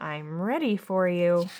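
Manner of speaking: put-on rough, gravel-voiced, frightening old woman voice. Reading a storybook aloud, an old woman greets the cubs: gravelly voice. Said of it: "she said in a gravelly voice".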